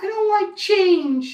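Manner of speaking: mocking, rigid voice with high, slow whine.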